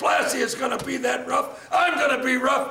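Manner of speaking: loud, high defiant shouting.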